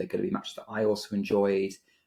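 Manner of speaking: ordinary talk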